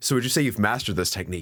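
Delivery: normal talking voice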